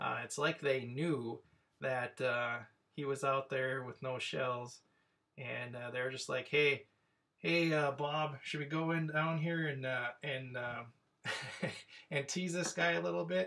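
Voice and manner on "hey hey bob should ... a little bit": acted out sly, needling, mocking, teasing tone. Retelling what they said to tease a man with no shells, acting out mocking taunts. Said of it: "they were mocking him".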